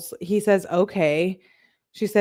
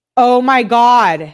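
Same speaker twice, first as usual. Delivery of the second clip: very loud, sudden, shocked yell, pitched up; 5 semitones higher, 10 dB louder than usual. Reacting to a text exchange being read out: yelling in shock. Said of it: "I didn't mean to yell in your ear".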